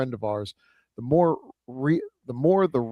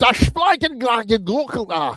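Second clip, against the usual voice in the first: very high, best-effort attempted German accent; 11 semitones higher, 5 dB louder than usual. Trying to read a German phrase aloud, best attempt at German accent. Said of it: "I'll do my best German".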